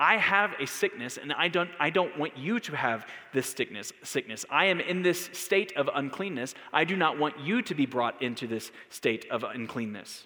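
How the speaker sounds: ordinary delivery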